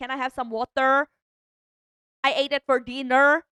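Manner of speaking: put-on English spoken with a Filipino accent. Speaker recalling being put into ESL as a child, speaking in a Filipino accent. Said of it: "I'm sorry I had a Filipino accent".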